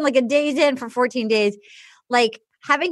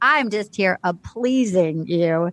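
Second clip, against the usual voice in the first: silky, low, slow smooth-talking delivery; 6 semitones lower than usual. Retelling what a man said to a woman, imitating a smooth talker. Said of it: "And he was so smooth".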